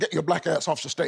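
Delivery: put-on British accent. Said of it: "with his British accent".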